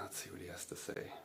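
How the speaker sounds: fast, soft whispered aside to oneself.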